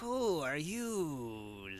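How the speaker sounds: hissing, challenging, "you" stretched out, swooping pitch. Voicing someone behind a door after a slot slides open: hissing. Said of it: "a voice from the other side hisses".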